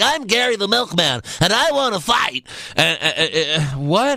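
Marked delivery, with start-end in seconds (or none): 0.0-2.5 put-on bland, plain male voice, pitched up.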